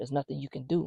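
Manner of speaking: put-on male whisper. Retelling a man's voice heard over a baby monitor, imitating a man whispering. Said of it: "it sound like whispering".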